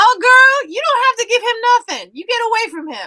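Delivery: very high, loud Southern hollering. Retelling cheering at a joust, imitating her own screaming. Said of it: "I was just screaming this at the top of my lungs".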